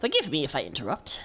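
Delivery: put-on sounds like an old man. Reading the bishop's lines aloud, Bishop Van Vartanoy old voice. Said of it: "I should do an old voice".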